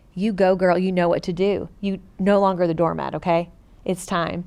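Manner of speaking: ordinary talk, nothing marked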